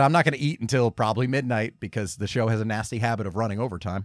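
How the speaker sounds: ordinary talk, nothing marked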